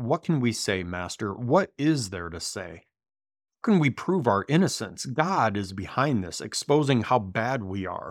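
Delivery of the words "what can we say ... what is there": usual speaking voice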